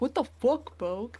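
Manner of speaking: smug self-satisfied swagger. Showing how the other speaker said the line: imitating a friend's fuckboy tone. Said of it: "you said it like".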